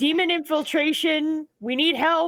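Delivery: shouting. Role-playing a character who calls out for the guards, shouting for help. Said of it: "going to shout for the guards".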